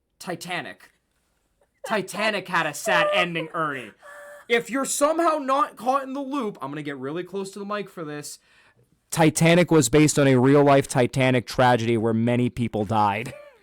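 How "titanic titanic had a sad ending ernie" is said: ordinary delivery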